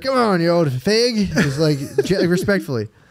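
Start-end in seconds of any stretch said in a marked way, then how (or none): 0.0-1.3 put-on slow, high, respectful old British gentleman voice. Retelling what they say to the dog at bedtime: old British guy voice. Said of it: "like an old British guy".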